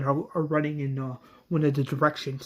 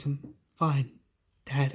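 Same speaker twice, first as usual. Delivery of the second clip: really sad, downcast, sorrowful voice; 4 dB quieter than usual. Carl, upset, answers his dad in the story: Carl, really sad voice. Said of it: "in a really sad voice".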